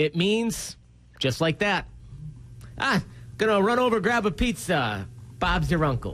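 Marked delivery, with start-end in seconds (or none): 2.8-6.1 odd, weird put-on Boston accent. Giving an example for an English saying, in a weird Boston accent. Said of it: "I just did a weird Boston accent for English".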